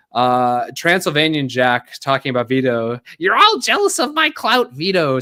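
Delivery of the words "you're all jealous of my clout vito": very high, swooping, sing-song voice. Quoting a line aimed at Vito: imitating Sturgis. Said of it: "saying that like Sturgis does".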